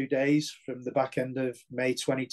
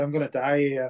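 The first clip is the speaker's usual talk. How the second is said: plain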